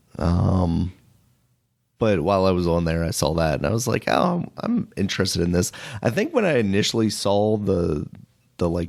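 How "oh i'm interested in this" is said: ordinary talk, nothing marked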